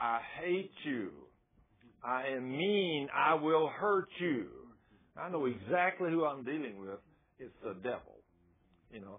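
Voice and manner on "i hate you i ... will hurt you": put-on very slow, drawn-out half scream, mild yell. Retelling a woman screaming at the people bringing her out: imitating someone screaming. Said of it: "she's screaming".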